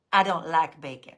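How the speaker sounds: put-on toddler voice with Southern country accent. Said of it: "with this country accent".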